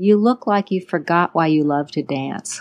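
mock whispering. Retelling what a dance teacher said into the ear: imitating a whisper. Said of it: "she whispers in my ear".

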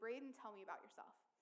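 ordinary talk

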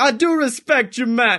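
put-on slow, tough-guy gangster British accent. Retelling a confrontation with a man filming in a store, in his gangster british accent. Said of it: "he had like that um that gangster british accent".

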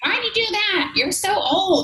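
tiny alien voice, very high pitch. Speaker voices their own inner critic, in a little alien voice. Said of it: "it's like my little alien voice".

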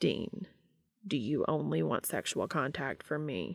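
unemotional, matter-of-fact, plain delivery with no reaction. Reading a story aloud, a character asks another a blunt question: deadpan tone. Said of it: "His tone was deadpan".

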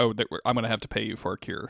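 ordinary delivery

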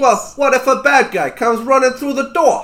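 put-on speaking with a New York accent. A player voices his small, knife-covered character, asked about sleeping: New York accent. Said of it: "I'm small! I'm kinda red! I'm kinda brown! Oh my god. The biggest thing about [name] is he's got knives. He's got knives all over him. ... I watched a YouTube video on how to talk like a New Yorker".

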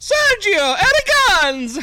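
very high, loud cartoon voice. Reading out a comic's title to the group: Mario voice. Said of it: "go with like the Mario voice".

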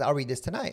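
mock emphasis, each word carrying weight, pointed. Retelling a director's promise to read a script, imitating a pointed remark. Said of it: "he said to me very, very s-, pointedly".

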